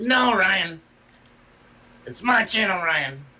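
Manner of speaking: high, swooping, slow, sing-song cartoon voice. Retelling someone snatching back his channel: Cartman voice. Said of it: "That's my best Cartman uh, impersonation".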